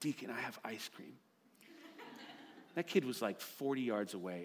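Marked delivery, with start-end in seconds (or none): 0.0-1.1 very quiet, hushed voice, barely above a whisper. Retelling how you called your running two-year-old after getting louder failed, just over a whisper. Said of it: "lowered my voice to just over a whisper".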